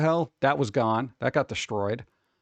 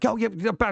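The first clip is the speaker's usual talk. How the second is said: high, tongue-tied, ramped-up gush of flustered excitement; 7 semitones higher than usual. Imitating a gaming show host getting ramped up: imitating excited, flustered speech. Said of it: "he'd get, like, ramped up and he'd be like".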